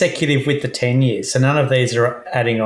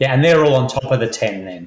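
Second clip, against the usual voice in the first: ordinary delivery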